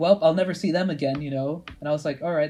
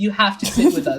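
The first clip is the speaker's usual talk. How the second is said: loud schoolgirl voice; 4 semitones higher, 5 dB louder than usual. Retelling people who asked to share chips: imitating the girls' voices. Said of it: "how convincing you do their voices".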